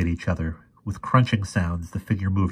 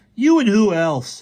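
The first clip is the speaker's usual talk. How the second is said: very high, drawn-out, slow goading taunt; 13 semitones higher, 5 dB louder than usual. Fergie answers a boy who threatened to punch him, taunting voice. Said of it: "said Fergie in a taunting voice".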